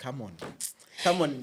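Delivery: normal talking voice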